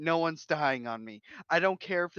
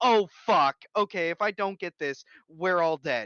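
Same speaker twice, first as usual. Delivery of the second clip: acted panicked voice; 4 dB louder than usual. Describing doing something solo under pressure, acting panicked. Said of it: "silent panic in my mind and voice of".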